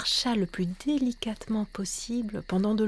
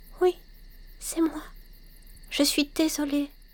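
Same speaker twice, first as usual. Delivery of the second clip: very small, tiny, high little voice; 6 semitones higher than usual. A narrator reads a story where Baila answers a giant bear: Baila's tiny little voice. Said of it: "elle répondit d'une toute petite voix".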